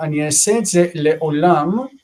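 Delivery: ordinary delivery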